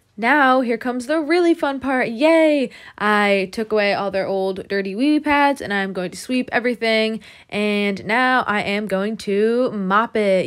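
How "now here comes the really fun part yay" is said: cheerful but thickly sarcastic delivery. Sweeping and mopping after removing old dirty pads, the speaker cheers with sarcasm.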